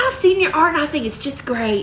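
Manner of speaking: put-on old southern belle voice and accent. Acting out the listener's phone call about getting a tattoo, old Southern belle voice. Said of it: "Old Southern Belle".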